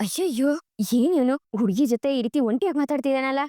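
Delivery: ordinary delivery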